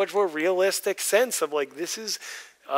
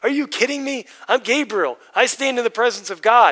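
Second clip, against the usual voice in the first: put-on exasperated, disbelieving, raised and pitched-up voice; 5 semitones higher, 6 dB louder than usual. Speaker retells Gabriel answering a man who doubts his words, acting out exasperation. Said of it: "you could almost feel like the exasperation in his voice".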